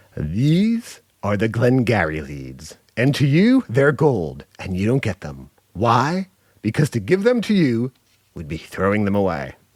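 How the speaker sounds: harsh, cold, cutting delivery. Quoting a harsh film sales speech: Alec Baldwin impression. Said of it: "my best Alec Baldwin impression".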